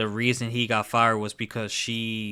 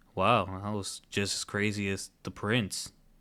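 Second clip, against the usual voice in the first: flat, level, toneless deadpan monotone; 4 dB quieter than usual. Retelling a little boy's line from a show: imitating a very monotone voice. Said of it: "in, like, a very monotone voice was like".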